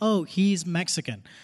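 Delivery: normal talking voice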